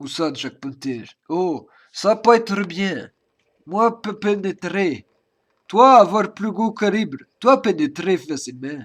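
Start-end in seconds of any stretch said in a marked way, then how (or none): 3.7-8.8 put-on speaking with a Russian accent. Speaker chats with a friend, putting on a Russian accent. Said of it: "je le fais bien l'accent russe".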